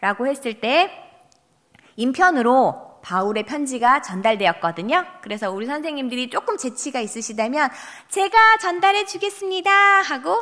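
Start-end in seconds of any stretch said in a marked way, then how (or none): 8.1-9.7 pitched-up woman's character voice. Showing teachers how to act a deaconess offering to deliver: imitating a deaconess's voice. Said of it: "어떤 여집사 목소리로 성대모사 해주시고요".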